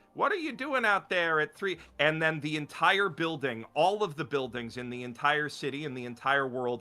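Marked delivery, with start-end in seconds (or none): 0.2-1.8 put-on old woman shouting, high-pitched. Retelling a story's plot where an old lady yells from a window: imitating an old lady screaming. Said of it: "this old lady is screaming out the".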